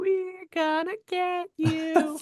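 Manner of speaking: very high, slow, drawn-out giggly taunting tone. Retelling a film scene where Linda threatens: imitating Linda giggling. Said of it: "Linda starts giggling again, like".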